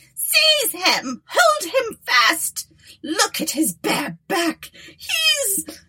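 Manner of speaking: very high-pitched, slow, furious cry of pain. Narrator reads the Baroness's words to the police, crying out in rage and pain. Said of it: "the old woman, / the old woman, breaking into the most brazen and shameless laughter, talked in the most depraved manner of a state of matters which would cause Aurelia to bid forever farewell to ever".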